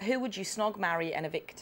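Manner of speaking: plain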